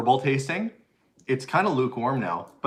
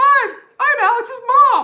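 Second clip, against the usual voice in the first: very high, very loud, drawn-out chipmunk squeak; 10 dB louder than usual. Mimicking how the speaker's mom sounds on a recording, imitating mom's chipmunk voice. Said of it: "she sounds like a chipmunk".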